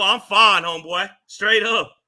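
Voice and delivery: slow, clearly rattled, emotional and aggressive. Insisting to another speaker that everything is okay, sounding upset while saying fine. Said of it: "You don't sound fine".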